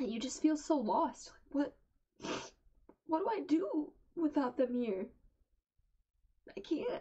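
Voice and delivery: high, tearful speech pushed through crying. Talking to her viewers, crying while talking. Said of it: "I can keep crying and crying and crying".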